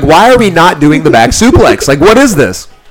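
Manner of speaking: furious, angry, demanding voice. Recounting the other man refusing a back suplex, retelling furious questioning. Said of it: "I'm like furious at this point".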